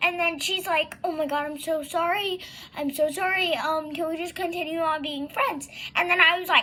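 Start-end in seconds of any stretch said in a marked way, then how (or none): none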